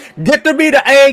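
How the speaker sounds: high-pitched, mock yelling voice. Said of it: "and then I tell my kid".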